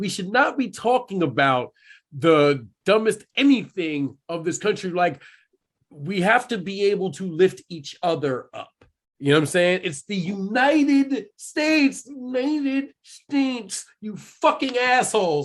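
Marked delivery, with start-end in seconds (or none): 9.8-15.5 high-pitched, drawn-out, furious angry yelling. Ranting to the others, then apologizing for it: yelling angrily. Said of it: "I'm sorry. I'm yelling".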